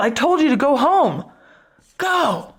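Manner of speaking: mock yelling. Retelling what a man yelled at a woman who stood firm, imitating a yell. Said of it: "And he yelled".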